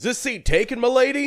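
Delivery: put-on gruff voice. Imagining how her dad would say it as a joke: imitating dad's gruff voice. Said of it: "Like just very like gruff".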